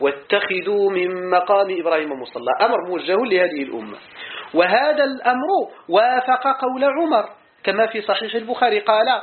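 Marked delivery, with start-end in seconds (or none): none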